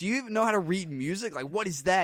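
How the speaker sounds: harsh, berating, scolding tone. Retelling a film scene, imitating Fletcher berating. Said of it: "Fletcher berates him about the tempo".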